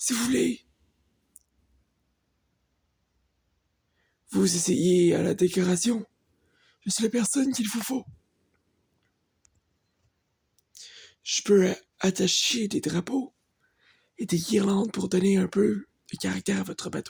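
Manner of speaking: put-on elderly man's voice. Reading a game character's lines aloud while playing: old man voice. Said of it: "c'est un vieux, donc euh, une voix de vieux".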